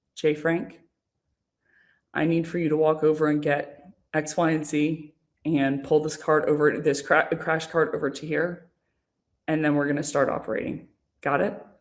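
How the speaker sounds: calmed down, calm, voice brought low. Speaker retelling how a woman gave orders in the ER, retelling a calm, lowered voice. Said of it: "she just calms down and she lowers her voice".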